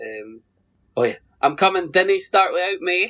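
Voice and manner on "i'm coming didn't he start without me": put-on high-pitched Scottish accent. Recalling a favourite bit from a show, quoting her in scottish accent. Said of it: "where she goes".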